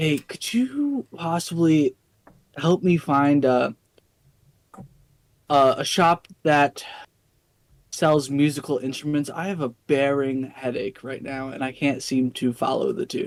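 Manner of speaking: quiet, hushed half-whisper. In a role-play, a character asks a companion for help, half-whispering. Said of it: "I whisper to her".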